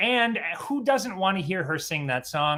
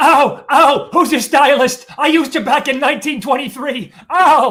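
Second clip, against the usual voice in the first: very loud, high-pitched, gushing voice; 7 semitones higher, 12 dB louder than usual. Joking about red carpet interviews, doing a Joan Rivers impression. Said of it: "It's my Joan Rivers impression".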